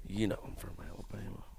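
very hushed, quiet, creaky, rough-edged mutter. Imitating Rick Grimes saying where he is from: Rick Grimes impression. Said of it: "Rick Grimes is like".

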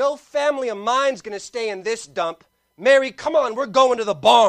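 loud, bold, confident, sure-of-himself delivery. Retelling a man's answer to the innkeeper, acting out a loud, confident declaration. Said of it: "he says with a very loud and confident voice".

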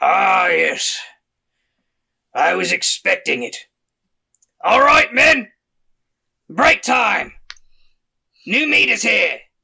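drawn-out, slow, loud brute half-orc voice. Voicing a very tall half-orc greeting an approaching caravan: voicing a half-orc. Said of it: "he looks at the caravan approaching and he says".

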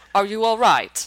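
put-on neutral general American accent. Recounting what someone asked, in a neutral American accent. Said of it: "It was kind of neutral American".

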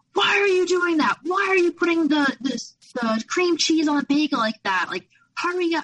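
acted, freaking-out, high-pitched screaming. Retelling being screamed at in a cafe in front of friends: imitating someone screaming. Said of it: "starts screaming".

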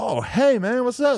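thrilled, super happy, very high voice. Retelling how a man he approached greeted him back, retelling a super happy greeting. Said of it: "He's like super happy to see me".

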